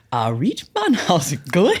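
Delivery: put-on, loud, sing-song Newcastle Geordie accent. Recalling coming home from weekends with friends in Newcastle, in a put-on Newcastle accent. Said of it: "go to Newcastle to hang out with my friends".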